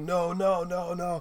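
acted, stubborn tantrum scream, high, very drawn out. Recounting a scene, acting out one character's refusal, retelling a scream. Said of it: "he's just screaming like".

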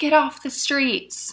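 high, mild, toned-down yelling. Retelling how a man in a car screamed at them on the sidewalk: imitating a man's scream. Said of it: "And he just screams like".

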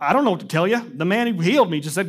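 acted-out, baffled, befuddled, at-a-loss delivery. Retelling a healed man answering a challenge about the law, imagining him befuddled. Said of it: "I'm imagining him befuddled".

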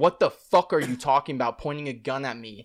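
imitated belligerent, angry tone. Retelling own reply to an officer pointing a gun: imitating own belligerent retort. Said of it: "belligerent and brave".

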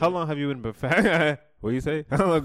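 talking through giggles. Asking a joking question while laughing, laughing while talking. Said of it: "I was laughing and trying to talk at the same time".

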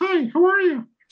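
very high, squeaky cartoon voice. Retelling a man who sounded like Mickey Mouse, in a Mickey Mouse voice. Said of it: "I suppose I have to do the voice, because the voice was the voice. ... He really sounded like Mickey Mouse".

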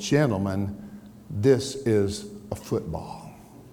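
slow, deliberate, measured, drawn-out words. Speaker retells a man holding up a football before the boys, said slowly. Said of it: "and said slowly".

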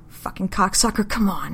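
put-on slurred, pained speech. Beth speaks to the man hurting her, slurring through aching jaw. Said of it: "she slurs through her aching jaw".

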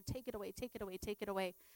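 put-on, repeated begging, pleading tone. Retelling praying while not feeling well: imitating own begging prayer. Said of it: "And I was begging the Lord".

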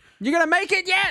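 acted, very high, insistent yell. Acting out a joke AI that calls every day, mock yelling as Gary Spelljammer. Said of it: "He just calls me every day and yells that".

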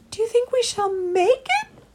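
very high, piping, squeaky voice. Reading a story, Christopher asks a question, in a very squeaky voice. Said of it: "Asked Christopher in a very squeaky voice".

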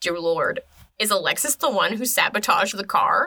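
ordinary talk, nothing marked

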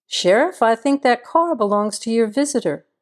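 ordinary delivery

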